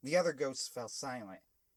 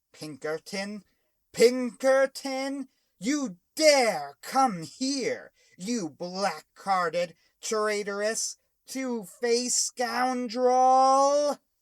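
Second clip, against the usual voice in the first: thundering, booming ghost voice, very loud and high; 10 semitones higher, 11 dB louder than usual. Narrator reads the ghost's furious line to Pinkerton; booming ghost voice. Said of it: "The ghost's voice boomed".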